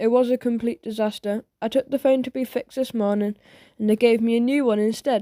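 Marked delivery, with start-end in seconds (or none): none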